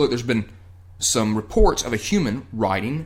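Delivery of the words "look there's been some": plain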